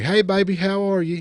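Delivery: put-on Appalachian accent. Retelling a gas station visit, quoting the woman working there in an appalachian accent. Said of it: "said in a very Appalachian way".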